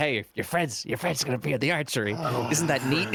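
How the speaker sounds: imitated whisper. Recounting looking at a list beside Carlisle, retelling whispering back to Carlisle. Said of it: "I'm like whispering back to Carlisle".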